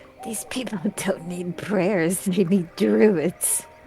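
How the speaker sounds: quiet whispered aside. Speaking in character just after another character's prayer for the land: whispering. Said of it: "I whisper to Grim".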